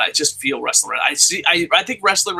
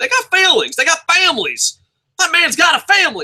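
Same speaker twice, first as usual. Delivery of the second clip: very high, swooping, badly put-on Southern accent; 14 semitones higher, 4 dB louder than usual. A host talking about the other hosts of the show, quoting J.R. in a southern accent. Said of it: "I never thought I'd quote J R in a southern accent".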